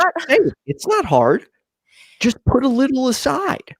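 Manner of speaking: mocking tone. Mocking the idea that people can just save money: sarcastic. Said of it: "I'm being completely sarcastic".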